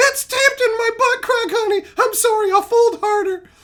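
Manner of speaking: very high, feather-light little put-on voice. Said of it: "you talk in that light voice".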